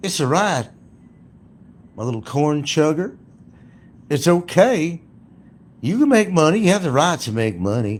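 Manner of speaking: put-on loud, very high-pitched Southern accent. Mocking what a YouTuber's attorney would tell him, in a put-on Southern accent. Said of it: "She puts on a southern accent too".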